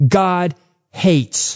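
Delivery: ordinary delivery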